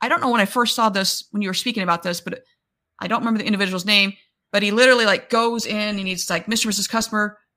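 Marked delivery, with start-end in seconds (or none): 6.5-7.3 put-on excited voice. Retelling a salesperson handing keys to a customer: imitating someone excited. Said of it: "And he's just so excited".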